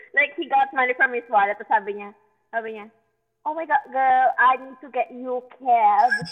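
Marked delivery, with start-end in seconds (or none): 3.4-6.1 put-on tipsy, drunken British accent. Retelling a drunk friend offering cab money: imitating a friend's drunk British accent. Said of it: "he has a British accent".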